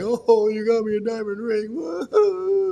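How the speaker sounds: very slow, high, weepy happy crying. Describing someone opening a diamond ring on Christmas morning: imitating someone crying happily. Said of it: "they're crying 'cause they're happy".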